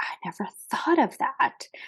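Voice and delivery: hushed, whispered voice. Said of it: "and she's like".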